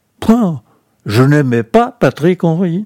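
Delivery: curt, dry answer. Answering a question about whether he liked a child murderer, curt and dry. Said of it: "je vais vous répondre sèchement".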